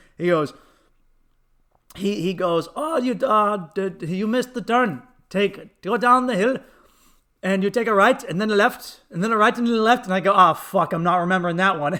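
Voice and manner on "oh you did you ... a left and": thick, heavy put-on Indian accent. Retelling a man giving him directions after a missed turn, thick Indian accent. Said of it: "he has this thick Indian accent".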